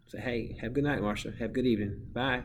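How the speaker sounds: ordinary talk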